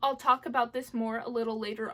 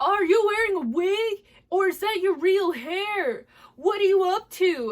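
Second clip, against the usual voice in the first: high shouting call; 7 semitones higher, 8 dB louder than usual. Retelling a stranger shouting questions from across the street: imitating a stranger shouting. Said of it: "some dude was literally across the street shouting".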